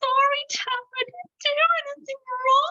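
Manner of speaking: very high, sobbing voice. Playing all three bears, now as Baby Bear apologizing, crying Baby Bear voice. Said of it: "Sometimes baby bear is crying".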